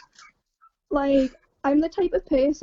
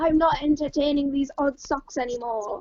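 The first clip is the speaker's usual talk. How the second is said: ordinary talk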